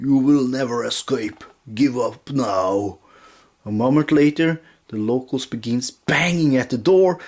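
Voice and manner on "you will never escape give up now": wet, gurgling monster voice. Narrating a voice heard from behind a barricaded door, in a gurgling voice. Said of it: "you hear a gurgling voice".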